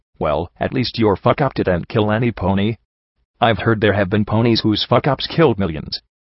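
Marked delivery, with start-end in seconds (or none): none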